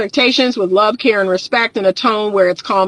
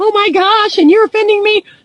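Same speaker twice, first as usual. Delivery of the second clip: play-acted, very high, tearful crying wail; 10 semitones higher, 3 dB louder than usual. Retelling a woman's reaction to calm talk, imitating someone crying. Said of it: "busting out crying and saying".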